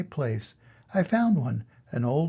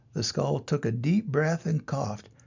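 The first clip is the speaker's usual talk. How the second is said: ordinary delivery, nothing marked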